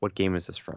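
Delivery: soft, hushed whisper. Retelling how the son asked a question during a concert: imitating Hayden whispering. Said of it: "Hayden whispers in my ear".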